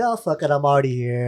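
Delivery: ordinary delivery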